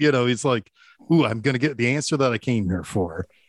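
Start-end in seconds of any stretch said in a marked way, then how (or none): 1.1-3.2 put-on excited character voice. Retelling a film scene, quoting Don's line: imitating excited Don. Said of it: "he looks excited".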